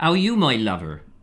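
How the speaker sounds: put-on, fake West Country accent. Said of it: "what's your West Country accent like?".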